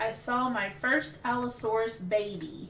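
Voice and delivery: ordinary talk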